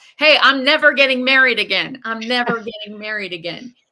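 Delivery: very loud, booming voice. Quoting a man who told everyone, even strangers across the street, imitating a very loud voice. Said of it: "told everyone in a very loud voice".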